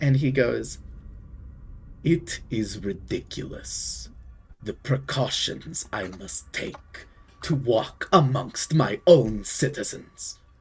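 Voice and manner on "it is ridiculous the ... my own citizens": slow, deliberate, looming giant villain voice. Game master voicing a newly arrived figure before ending the session, seven-foot villain character voice.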